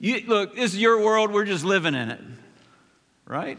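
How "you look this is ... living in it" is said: put-on sarcastic, fake-agreeing tone. Paraphrasing a scripture verse to show how it sounds: mock sarcastic paraphrase. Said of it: "This is sarcasm one oh one".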